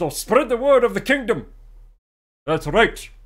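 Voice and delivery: loud, regal king voice with Scottish accent.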